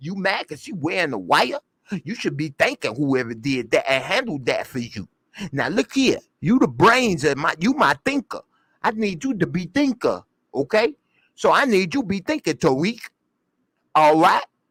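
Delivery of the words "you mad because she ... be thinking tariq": slight put-on New York tough-guy gangster accent. Retelling a woman's scolding over the wire; little New York gangster accent. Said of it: "Trying to do her little New York gangster accent".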